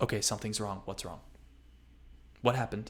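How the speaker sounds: very hurried, hushed whisper. After everyone seems pleased, she turns around; retelling it very hurriedly. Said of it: "she very hurriedly goes".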